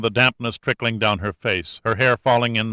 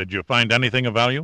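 ordinary delivery, nothing marked

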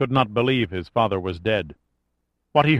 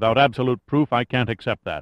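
ordinary delivery

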